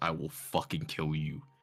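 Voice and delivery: muttering under breath. Threatening the blacksmith over his price: muttering under breath. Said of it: "I am just talking under my breath".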